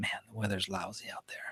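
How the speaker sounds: very quiet, hushed whisper, close up. Telling a joke, speaking to his wife in bed: imitating own whisper. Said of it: "I just whispered to her".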